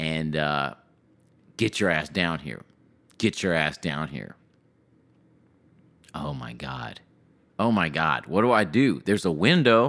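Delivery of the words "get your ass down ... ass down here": imitated angry man, cursing tone. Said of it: "He's cussing".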